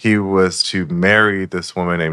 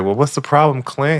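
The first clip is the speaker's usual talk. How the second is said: put-on coaxing voice, higher; 8 semitones higher than usual. Retelling how Clint's mom tries to pull it out of him, imitating Clint's mom coaxing. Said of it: "trying to pull it out of him".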